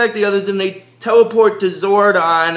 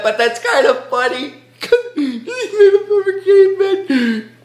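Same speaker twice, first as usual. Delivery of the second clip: very high, talking through giggles and laughter; 11 semitones higher than usual. Apologizing to the guys for finding it funny, laughing while talking. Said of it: "I'm sorry guys if I'm laughing about that".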